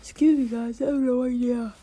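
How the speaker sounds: words pushed out while yawning. Speaker apologizes to the viewers, yawning while talking. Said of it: "Well I'm yawning".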